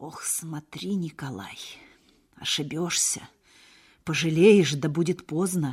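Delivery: said quietly, softly spoken. Narrator reads Trofim's reply to Nikolai; said quietly. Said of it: "сказал тихо Трофим".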